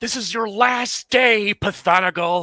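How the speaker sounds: high, loud, charging battle yell. Player's character charges at a cultist to strike him: battle yell. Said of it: "he's gonna yell like".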